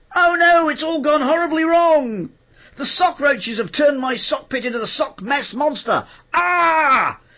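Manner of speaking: very high, loud cartoon voice, with ah stretched. Showing how lines are recorded alone in the sound booth: Smelly cartoon voice. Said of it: "So you do things like this. You go".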